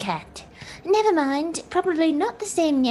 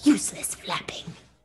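imitated whisper, lower pitch; 8 semitones lower, 4 dB quieter than usual. Retelling what was said to friends at the time: retelling a whisper. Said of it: "I whispered just to them".

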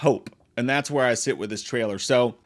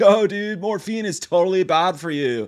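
loose, easygoing, pitched-up, laid-back surfer drawl; 6 semitones higher than usual. Imitating RoboCop recast as a surfer: surfer dude voice. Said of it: "change him to a surfer dude".

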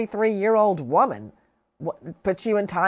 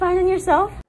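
put-on voice several octaves higher, very high; 11 semitones higher, 3 dB louder than usual. Pretending to be a student meeting the principal: put-on voice several octaves higher. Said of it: "She's raising her voice several octaves".

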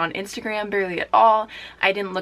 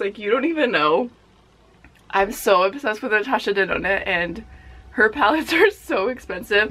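on the verge of tears. Talking to viewers about a natasha denona palette, on the verge of tears. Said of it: "legit gonna cry, like, real tears".

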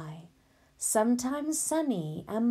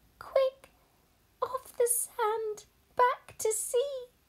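urgent, very high crying out. Narrator reading the snail's line to a beached whale, crying out urgently. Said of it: "cried the snail".

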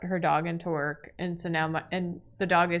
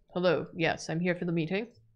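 put-on, mock-serious dog voice; 4 dB quieter than usual. Voicing a Pomeranian arriving for its rehoming interview: put-on serious voice for a dog. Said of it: "his very serious face of, like".

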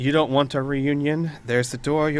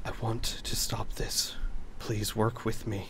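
hushed, barely audible whisper; 4 semitones lower, 8 dB quieter than usual. Narrating a role-play game, voicing a character speaking during a search, very quiet. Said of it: "he very quietly says".

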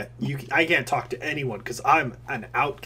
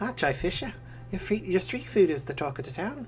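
put-on female character voice with accent; 5 semitones higher, 5 dB quieter than usual. Voicing a female game character, the speaker does a put-on accent. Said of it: "Let me just remember how to do this accent".

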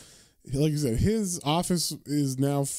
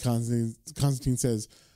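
ordinary talk

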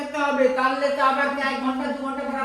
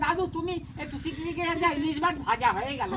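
ordinary talk, nothing marked

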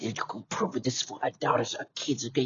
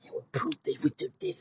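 very high, quiet, hushed, menacing threatening voice; 7 dB quieter than usual. Retelling how a woman spoke to the speaker, in a mock-menacing voice. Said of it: "using all this menacing voice".

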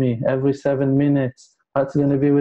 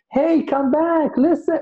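shrill, very high, desperate acted scream. A speaker acts out someone calling the listeners to come back: retelling a scream. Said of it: "He's screaming".

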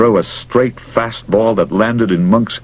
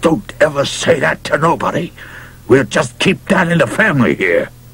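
seething fury through clenched teeth, pitched up; 6 semitones higher than usual. Narrator reads a character warning his grandpa, in quiet fury. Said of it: "he said in a quiet fury".

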